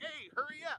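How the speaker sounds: very high-pitched, shrill hollering yell. Retelling crew members hurrying them along: imitating someone yelling. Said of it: "They're the ones yelling at you".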